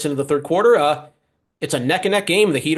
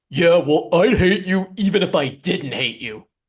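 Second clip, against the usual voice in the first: slow, drawn-out cartoon-style voice. Teasing the other speaker for sounding like Patrick Star: Patrick Star voice. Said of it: "you're sounding like Patrick and SpongeBob".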